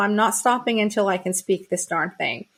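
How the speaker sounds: ordinary talk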